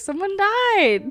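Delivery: chipper upbeat delivery. Retelling announcing bad news at a table: cheery, imitating own past words. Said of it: "So cheery, somebody died".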